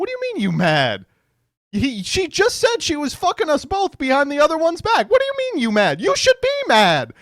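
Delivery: high disbelieving exclaim. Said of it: "he's like".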